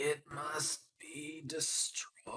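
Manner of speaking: barely audible, faint, very quiet whisper. A storyteller voicing a character who falls into a player's arms, whispering. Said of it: "and he whispers".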